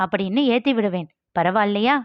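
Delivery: ordinary delivery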